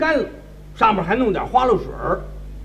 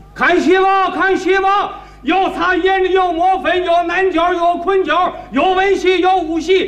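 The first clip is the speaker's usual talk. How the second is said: ticket hawker crying his wares. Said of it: "就靠着门口站俩人在那儿喊".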